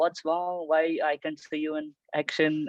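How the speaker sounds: usual speaking voice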